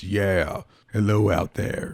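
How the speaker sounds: dark, heavy, deep, slow voice-changer effect. Demonstrating a voice-changer button on air: deep, dark voice-changer voice. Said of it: "I get this deep, dark voice".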